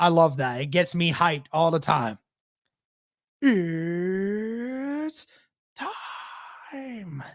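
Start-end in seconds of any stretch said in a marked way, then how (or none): 3.4-7.2 soft ring-announcer voice, It's stretched out. Saying how much they love doing it, then doing a Bruce Buffer impression. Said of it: "I love doing the impression of Bruce Buffer".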